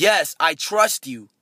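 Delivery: slow, a little angry and upset. Retelling a story, voicing a man's reply: imitating an aggravated, angry reply. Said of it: "aggravated, a little angry, a little upset".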